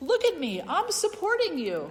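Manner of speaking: high, loud, smug, self-congratulating voice.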